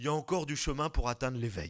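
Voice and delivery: big, heavy voice, laughing. Retelling a remark made after bursting out laughing: imitating someone's big voice. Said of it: "il me dit avec sa grosse voix".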